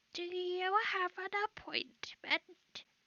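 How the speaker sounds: very high, calling stone sentry statue voice. Narrating for the group, voicing statues beside an archway: statue calling out. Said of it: "the statues turn to you and the voice calls out".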